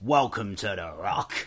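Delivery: put-on Scottish accent. Recalling a cheesy line from a mid-90s action film, do it in a Sean Connery Scottish accent. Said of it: "Sean Connery in his Scottish accent".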